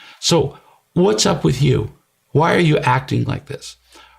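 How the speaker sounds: voice dripping with disgust. Retelling how a mother questioned a father at dinner: imitating a disgusted tone. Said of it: "was one of disgust, which I just illustrated".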